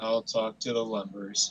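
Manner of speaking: reluctant, sighing, low, with zero excitement. In a scene, a character plans next steps with another character, sounding unenthusiastic. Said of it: "you don't sound too excited about that".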